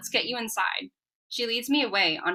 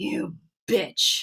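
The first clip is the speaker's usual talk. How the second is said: muttered, broken, mechanical growl like damaged machine. A stabbed attacker mutters at the narrator in a broken mechanical growl. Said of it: "he mutters in a broken, mechanical growl".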